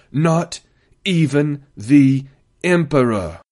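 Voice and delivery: hard stress on each of not, even, the, Emperor. A man speaking nose to nose with a general, stressing not, even, the, emperor. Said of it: "he emphasized each of the next four words".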